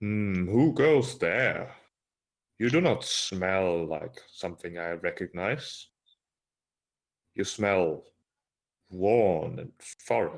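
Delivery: rolling, rumbling voice. Narrating a scene, voicing an unseen speaker calling out to Artemisia: deep rumbling voice. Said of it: "she hears a a deep rumbling voice".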